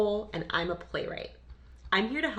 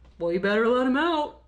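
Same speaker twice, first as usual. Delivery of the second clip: silly, loud, high put-on goofy voice; 6 semitones higher, 8 dB louder than usual. Retelling her mom's childhood prank call to the drugstore; goofy voice. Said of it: "(Goofy voice)".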